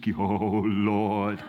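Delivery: low, hushed, wobbly, spooky prayer-like voice. Describing how some people suddenly change voice to pray: imitating a wobbly praying voice. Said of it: "goes into this wobbly voice".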